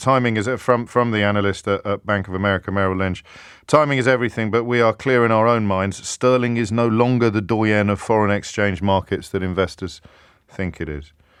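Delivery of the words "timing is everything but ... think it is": plain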